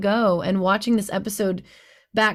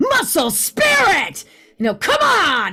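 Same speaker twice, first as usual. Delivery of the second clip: rough-edged, gruff, drawn-out fighter voice; 8 semitones higher, 4 dB louder than usual. A voice actor demonstrates a fighting-game character's voice, rough and gruff. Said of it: "It's a it's very rough and gruff".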